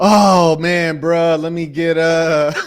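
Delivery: slow, hesitant, drawn-out speech. Acting out a customer at Chipotle who can't decide: imitating an indecisive customer.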